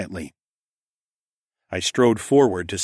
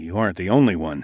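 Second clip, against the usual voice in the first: ordinary delivery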